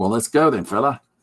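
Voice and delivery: clumsy, bad put-on Australian accent. Explaining how to jump straight into a scene, voicing a line in a bad australian accent. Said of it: "really bad at uh, Australian accent".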